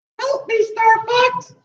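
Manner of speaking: very high, super annoying voice. Introducing the members of the Star Fox team, Slippy Toad voice. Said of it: "super really annoying voice".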